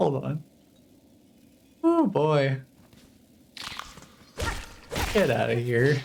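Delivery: speaking through hard laughter. Speaker cracks up at a character's line, laughing hard while talking. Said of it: "I'm crying".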